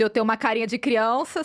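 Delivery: ordinary talk, nothing marked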